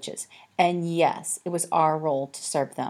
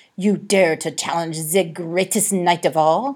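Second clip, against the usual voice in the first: put-on growling voice with a French accent; 5 dB louder than usual. One cat challenges another cat to a fight, growled in a french accent. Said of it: "growled Harvey in a French accent".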